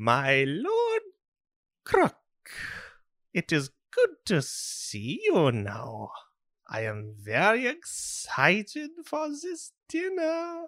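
put-on German-accented voice. Voicing the administrator greeting lord croc at dinner: little german man accent. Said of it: "like a little Nazi man".

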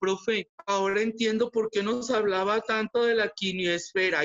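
goofy, silly, dopey voice. Retelling messages students sent during online classes: imitating students in a silly tone. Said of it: "te lo digo con ese tono tonto".

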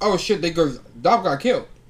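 ordinary talk

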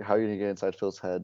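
ordinary delivery

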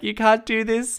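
very high-pitched, tearful crying, acted out. Retelling what she said after telling mom, acting out crying. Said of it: "So I was like crying".

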